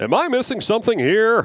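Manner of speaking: very high-pitched voice. Showing the others an impression of an uncle who was in radio: John Schreiner impression. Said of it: "one of 'em is my uncle, John Schreiner. Here's what he sounds like".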